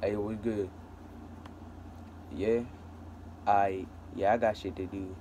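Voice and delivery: put-on, made-up deep, low voice. Showing how to greet a friend, in a put-on deep voice. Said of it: "talk in a deep voice. We have to have a voice like this".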